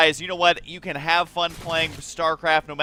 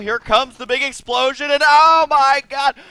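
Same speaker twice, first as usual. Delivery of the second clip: mounting, loud, excited sportscaster hype, building intensity; 8 semitones higher, 7 dB louder than usual. Casting as the big explosion comes, voice growing increasingly intense. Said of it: "Why is my voice getting more and more intense right now?".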